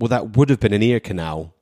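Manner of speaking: normal talking voice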